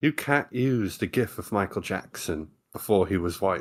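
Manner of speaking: convincing, well-done put-on British accent. Speaker repeating how someone said it, british accent. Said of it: "That's a really good British accent".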